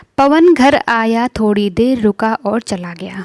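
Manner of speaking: unbroken, continuous reading with no pauses at all. Reading a practice-set question sentence aloud: one flow, no pauses. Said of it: "मैंने जब इसको पढ़ा ना तो एक बिल्कुल फ्लो में पढ़ा".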